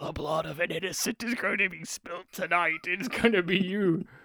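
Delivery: eerie, possessed-sounding voice. Describing a movie jump scare, speaker acts out the line: Emma Thompson possessed voice. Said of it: "speaking in a possessed voice".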